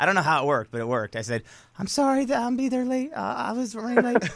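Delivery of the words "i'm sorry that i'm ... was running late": very high, put-on girly voice. Retelling a phone call made in disguise: imitating own girlish voice. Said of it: "my girlish voice".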